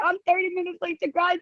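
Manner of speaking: high, stressed-out yelling. Speaker retells yelling at the dog while late to a call: retelling a yell. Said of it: "I'm like yelling at my dog".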